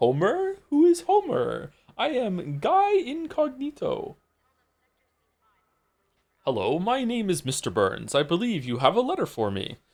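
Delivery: very high, drawn-out, swooping cartoon voice. Answering a request for a Homer Simpson impression: attempting Homer Simpson voice. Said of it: "What's your best Homer Simpson impression?".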